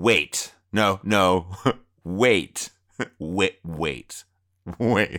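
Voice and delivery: very slow, acted-out stunned disbelief, words repeated. Retelling a man's reaction after the kick goes through, imitating stunned disbelief. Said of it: "I guess like in disbelief".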